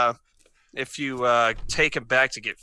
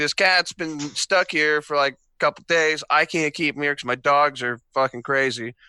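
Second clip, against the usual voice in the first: ordinary talk, nothing marked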